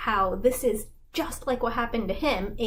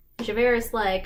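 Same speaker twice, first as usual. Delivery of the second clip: plain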